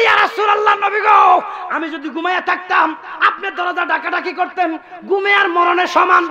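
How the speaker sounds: high, shouted, pleading cry.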